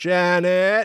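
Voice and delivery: put-on high, drawn-out call, name stretched, older woman's voice. Retelling a story where janet hears a voice call her from downstairs, older woman's voice. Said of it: "then hears the voice".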